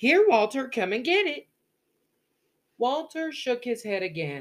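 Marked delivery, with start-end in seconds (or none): 0.0-1.5 impatient, voice raised and pitched up. Miss Caroline calls Walter over again after he declines, impatient. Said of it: "Impatience crept into Miss Caroline's voice".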